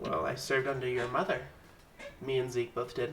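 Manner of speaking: very quiet, soft voice with slight lisp. Game master voicing a character who answers a player's question, very quiet, almost lisping. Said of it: "He speaks very quietly and lispy almost".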